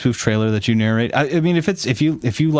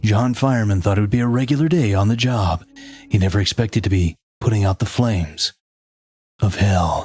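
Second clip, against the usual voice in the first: epic, dramatic movie-trailer narration voice; 2 semitones lower than usual. Narrating a story about john fireman, in a dramatic voice. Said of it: "Let's do it in dramatic voice".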